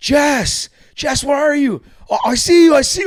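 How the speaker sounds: shrill, very high, loud, drawn-out yell. Retelling pushing through a crowd to the boats: imitating Rick yelling. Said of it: "just yelling this the whole time through the crowd".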